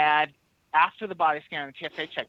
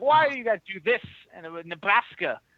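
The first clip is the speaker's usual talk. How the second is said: yelling man voice, higher; 4 semitones higher than usual. Retelling how a passenger yelled at them: imitating a yelling man. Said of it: "the dude that was yelling at me".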